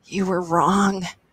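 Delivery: strained words pushed out on a wheeze. Beaten senseless and lying in an alley, wheezing. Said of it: "he wheezed".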